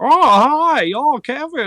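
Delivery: very high, very slow, stretched-out botched voice. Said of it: "I can do Jimmy Stewart".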